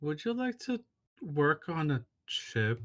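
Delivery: very slow, soft, drawn-out delivery. Playing a character stretching over toward someone kneeling, saying it really slow. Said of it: "he kind of like says it really slow".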